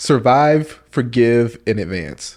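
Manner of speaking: each word laid out deliberately. Repeating a short phrase when asked to say it slow: said slowly. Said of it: "Say it slow for the people in the back".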